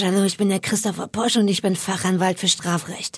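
low, odd, deep gangster voice. Describing a TV lawyer's show intro, doing Christopher Posch's gangster voice. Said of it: "Genau mit dieser komischen Stimme sagt er das".

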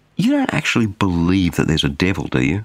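doubtful, intimidating, swooping skeptical tone. Retelling someone's doubting question to the speaker: imitating skeptical questioning. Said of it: "with quite some skepticism in their voice".

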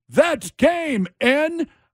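mock, high-pitched shouting like a crowd yell. Retelling what a guy at a bar kept yelling from a chair: imitating someone yelling. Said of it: "stood on a chair yelling".

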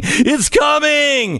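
high, slow, drawn-out yell.

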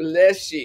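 bless said with full meaning.

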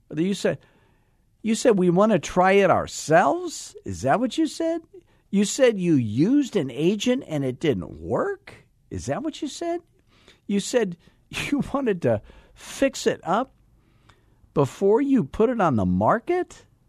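incredulous disbelief at a very high pitch. Speaker showing how to repeat back what someone said, incredulous questioning tone. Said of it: "I can't believe you said that tone in your voice".

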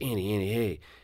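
whispered speech. Retelling how a son calmed his clinging sister: imitating a whisper. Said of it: "Kinda whispers right on Annie's level".

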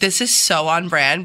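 ordinary talk, nothing marked

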